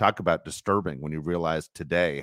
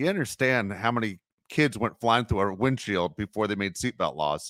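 usual speaking voice

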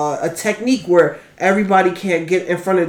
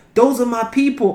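high, pissed-off, put-on indignant outburst; 5 semitones higher than usual. Retelling how the princess reacted when her people were sent to the front line: imitating an angry princess. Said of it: "she was pissed".

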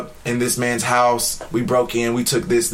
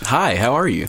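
put-on, prim, proper, polite voice. Describing how his voice changes when he turns into somebody else, proper voice. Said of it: "his voice is like".

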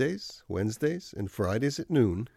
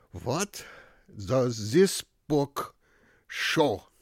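put-on thick, heavy German accent, laid on strong. Recalling the man who taught you to read, asking from the lectern, thick German accent. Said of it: "say in a thick German accent".

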